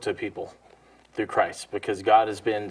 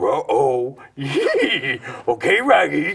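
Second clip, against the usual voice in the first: very slow, drawn-out, swooping cartoon dog voice; 3 semitones higher, 4 dB louder than usual. Showing the voice used when the dog pees: Scooby-Doo voice. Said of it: "Scooby-Doo for my kids".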